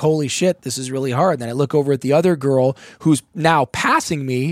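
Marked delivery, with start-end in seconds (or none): 0.0-1.3 put-on laughing while talking. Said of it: "cracking up".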